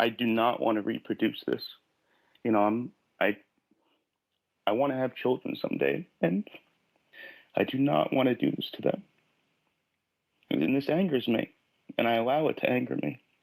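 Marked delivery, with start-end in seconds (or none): 0.0-9.0 choked-up voice catching in the throat. Pressed by the other speaker about covering up her feelings, choking up. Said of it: "I'm just, I'm choking up".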